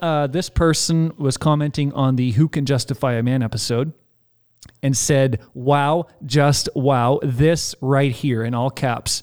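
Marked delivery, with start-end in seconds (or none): none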